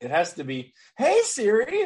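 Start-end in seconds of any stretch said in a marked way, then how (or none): 1.0-1.9 very high, put-on, cheerful, happy chirping voice. Showing how the phone assistant must be summoned: put-on happy voice. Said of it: "summon the genie with happy voice".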